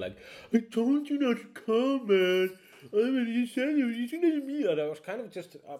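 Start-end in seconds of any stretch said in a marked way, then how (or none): 0.5-4.7 put-on very high, loud, annoying bratty teenager whine. Retelling snapping at people who came to a show: imitating an annoyed teenager. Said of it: "turned into a, like, super annoying teenager".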